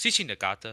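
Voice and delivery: put-on Portuguese accent. Imitating someone who pronounces a Japanese name in a Portuguese accent. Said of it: "and he'll be like".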